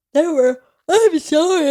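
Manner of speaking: high yawn through the words. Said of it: "I keep yawning".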